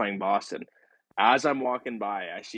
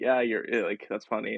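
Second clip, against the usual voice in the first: put-on laughing while talking. Retelling his laughing reply to a coach saying he starts tonight: retelling laughing while talking. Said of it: "kinda, like, laughing".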